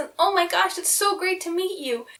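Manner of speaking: bubbly, overjoyed, high, super-excited gushing cleric voice. Showing how a dwarven cleric they played talked; super excited dwarven cleric voice. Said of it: "And she talked like this".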